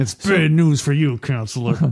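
mock speaking through clenched teeth. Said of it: "that's more what I'm imitating".

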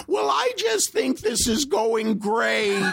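high, squeaky, slow-spoken, drawn-out voice. Retelling what a man said as he walked in, high squeaky voice. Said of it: "he has this high, squeaky voice".

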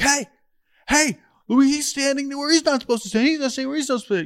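yelling with a very high voice. Retelling Aaron Boone pointing at a coach: imitating Aaron Boone yelling. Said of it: "the Aaron Boone yelling and being like".

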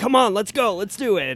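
imitated excited coach voice. Retelling how a band teacher taught, imitating an excited coach. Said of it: "he taught like a coach".

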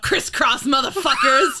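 high, loud yelled-out call. Retelling what a character shouted while being followed: imitating someone yelling. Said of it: "she yells out".

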